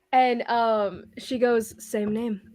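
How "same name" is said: put-on dry, husky, raspy woman's voice. Voicing a grinning fighter who answers the players: dry husky raspy voice. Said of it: "just a dry voice".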